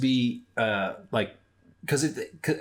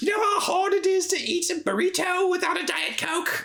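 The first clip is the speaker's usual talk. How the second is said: fake British accent, very high-pitched. Voicing a character missing her Diet Coke: put-on British accent. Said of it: "Suddenly she's British".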